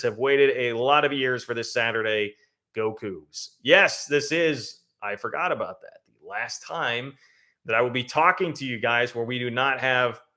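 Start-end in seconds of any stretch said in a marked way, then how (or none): none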